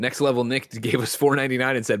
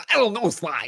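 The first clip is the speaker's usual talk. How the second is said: nerdy cartoon character voice, pitched high; 8 semitones higher than usual. On a PlayStation podcast, repeating his Bentley line for everybody, Bentley voice. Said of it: "That was it right there".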